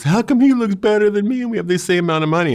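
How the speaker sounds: very high-pitched, loud, tearful crying voice. Retelling a brother's complaint about clothes: imitating Jonathan crying. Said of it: "my brother Jonathan starts crying".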